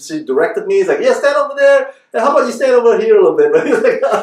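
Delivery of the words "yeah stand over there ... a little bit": thick Texan Southern twang, very high-pitched. Retelling how a Texan woman directed a photo, in a heavy Southern accent. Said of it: "with her heavy heavy Southern accents".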